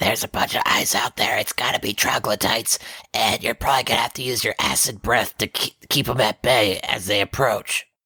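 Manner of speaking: minimal, hushed whisper. A player's character quietly tells ku what they saw, whispering. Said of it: "I'm whispering to Ku the whole time".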